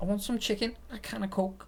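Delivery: put-on very high-pitched Liverpool Scouse accent. Quoting a comedian's phrase for kickstarting an accent, in a scouse accent. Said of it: "is what he says to get his Scouse accent going".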